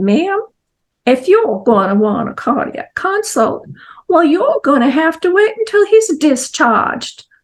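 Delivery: imitated Southern accent. Retelling what the hospital doctor said: imitating a southern accent. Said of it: "in his fine Southern accent".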